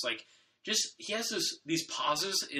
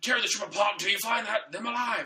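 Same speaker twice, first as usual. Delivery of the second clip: put-on villain yell, pitched much higher; 6 semitones higher, 4 dB louder than usual. Comparing Kylo Ren to Darth Vader, the speaker does a Darth Vader yelling impression. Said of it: "he like yells like".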